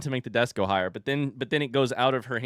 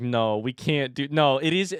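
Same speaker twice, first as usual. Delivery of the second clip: flustered, scrambling, panicked, slow and rising. Retelling own words from a moment of panic: retelling own panicked words. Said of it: "I was panicking".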